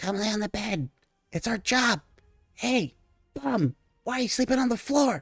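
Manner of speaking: soft, high-pitched coaxing half-whisper. Voicing creatures under a bed urging someone to lie down: soft half-whispers of creatures. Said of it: "you hear these soft whispers of these creatures".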